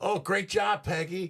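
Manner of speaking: mocking, fake-sounding tone. Asking about calls from party people, sarcastic imagined praise. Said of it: "I'm being sarcastic".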